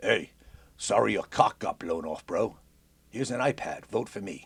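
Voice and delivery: bad fake Russian accent drifting into Australian. Mocking a Russian politician's fundraising photo op, Russian accent drifting Australian. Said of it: "Don't know why I went Australian with that".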